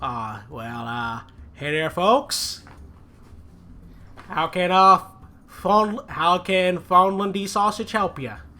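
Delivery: little goblin character voice. Narrating the scene, the speaker voices the goblin manning a sausage stand in a small goblin voice. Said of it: "a small goblin manning the stand, and he's like".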